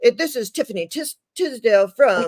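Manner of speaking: mock TV news reporter delivery, put-on newscaster voice. Riffing on a name with a friend, announcing it in a news reporter voice. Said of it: "It sounds like a reporter".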